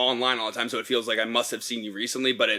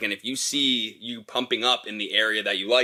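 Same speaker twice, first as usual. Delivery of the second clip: normal talking voice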